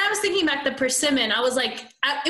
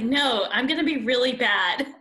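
plain

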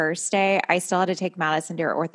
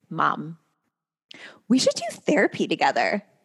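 put-on eager, excited teenage girl voice, swooping sing-song. Retelling a daughter's words to her mom: imitating excited daughter. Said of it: "with a fucking smile and excitement in her voice".

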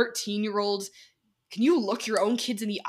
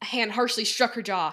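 ordinary delivery

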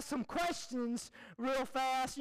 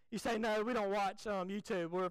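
ordinary delivery

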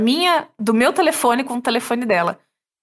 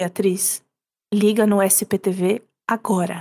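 hushed, low, quiet and slow voice; 4 semitones lower than usual. Retelling a mother's phone call: imitating mom speaking quietly. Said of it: "falando baixo".

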